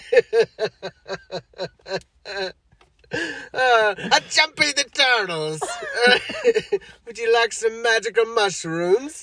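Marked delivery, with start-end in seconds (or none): 3.5-9.2 high, slow mock Italian accent. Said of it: "racist Italian accent".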